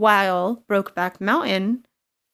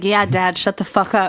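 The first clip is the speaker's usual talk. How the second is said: loud, mocking, smug tone; 5 dB louder than usual. Retelling a wife's retort to her husband: imitating a smirking retort. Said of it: "But she said it with a smirk".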